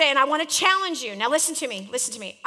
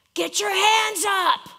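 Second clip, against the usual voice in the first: put-on high, screamed coach yell; 6 semitones higher, 3 dB louder than usual. Remembering high school basketball, the speaker imitates a coach screaming from the bench. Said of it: "the coach would be screaming from the bench".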